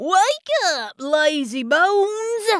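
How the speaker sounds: put-on high cowboy drawl, "bones" stretched out. Pounding on the girls' door to wake them: cowboy drawl. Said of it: "he said in his best cowboy drawl".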